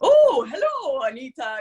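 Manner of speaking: put-on thick Polish accent, high and animated. Retelling a father's phone greeting: imitating thick Polish accent. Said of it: "he has a very thick Polish accent".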